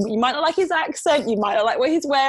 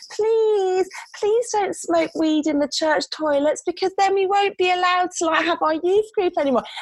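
put-on whiny, wheedling, manipulative child voice, pitched up; 7 semitones higher than usual. Demonstrating the child voice adults use with young people: whiny, manipulative child voice. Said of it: "it's a really kind of whiny, manipulative voice".

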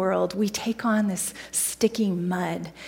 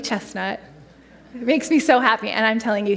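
ordinary talk

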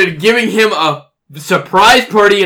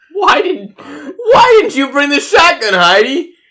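put-on pitiful little-girl voice, much higher; 8 semitones higher than usual. At a shotgun-blasted door, al turns to heidi, sounding like a poor little girl. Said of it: "Stop sounding like a poor little girl".

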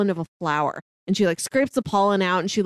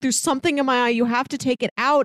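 acted, mock screaming; 4 semitones higher than usual. Describing a favourite scene, acting out a man screaming. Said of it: "And then he starts screaming".

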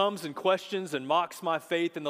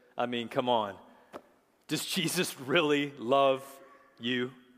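mock laughing while speaking, lower pitch; 4 semitones lower than usual. Retelling what a man said while pointing to grandchildren, retelling a laughing remark. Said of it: "he laughs and he says".

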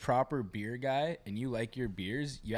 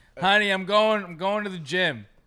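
slow, fake drunk slurring, words smeared; 7 semitones higher, 10 dB louder than usual. Friends joking about a gym that sells booze imagine a patron, fake drunk slurring. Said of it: "Fucking slurring your words".

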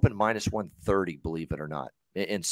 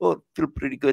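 put-on high-pitched voice with Russian accent. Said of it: "if I put my Russian accent on".

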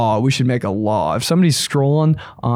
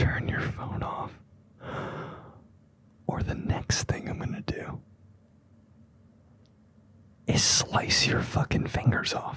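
very hushed angry whisper, yelling in a whisper. Telling listeners what to say in public, the speaker imitates a mom whisper-yelling. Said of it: "but they're whispering".

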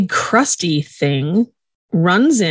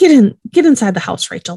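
put-on mommy voice, higher and louder; 4 semitones higher, 4 dB louder than usual. Retelling what Hot says to Rachel, in Hot's mommy voice. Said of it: "uses then her mommy voice and says".

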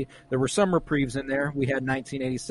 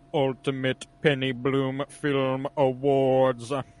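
low, deep delivery. Host announcing the ultimate film awards, striking a deep tone. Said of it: "strike the deep tone".

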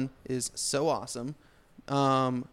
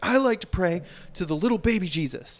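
high, upset, worked-up voice; 6 semitones higher, 4 dB louder than usual. Quoting the movie character getting upset: imitating an upset prayer. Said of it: "he gets all upset".

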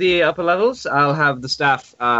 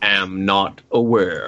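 very low, slow, droll, dour deadpan; 7 semitones lower than usual. Voicing Izek answering the group's questions: dour, droll voice. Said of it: "The two dour, droll motherfuckers".

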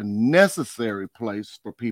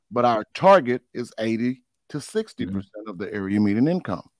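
ordinary talk, nothing marked

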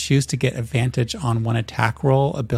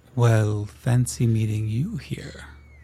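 slow, methodical, deliberate, wise-sounding voice. Narrating an overheard conversation, the first voice slow, methodical, wise. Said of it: "one voice slow methodical wise".

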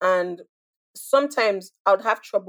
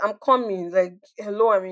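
ordinary talk, nothing marked

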